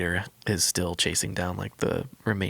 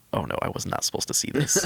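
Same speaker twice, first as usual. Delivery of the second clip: play-acted, scared, pitched-up panicked voice; 7 semitones higher than usual. Retelling how an officer reacts after walking in on something: imitating a scared officer. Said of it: "the officer, like, walks in and, like, sees it. And he's like".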